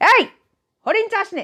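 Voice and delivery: shouted, scolding tone. The master of the house interrupts the performers in the middle of a play; loud scolding. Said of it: "কর্তা সজোরে ধমকে উঠলেন".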